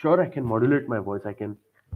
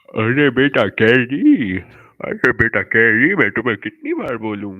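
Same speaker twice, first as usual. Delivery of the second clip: put-on old man voice, louder; 9 dB louder than usual. Showing an impression of the character Tao: Tao character voice. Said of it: "so it goes like this".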